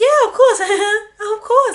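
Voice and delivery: very high, drawn-out, imitated reality-star voice. Retelling a reality show moment, imitating Nancy answering a question. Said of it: "your impression of Nancy is dead".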